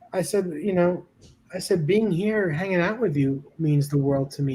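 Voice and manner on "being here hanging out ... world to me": ordinary delivery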